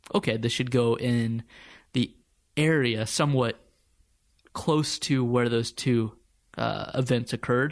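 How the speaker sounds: normal talking voice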